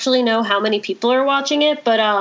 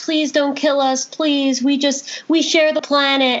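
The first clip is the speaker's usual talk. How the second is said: mock crying, put-on sobbing and pleading; 3 semitones higher than usual. Retelling a tv episode where a monster pleads with humans, imitating crying, begging. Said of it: "crying, begging like".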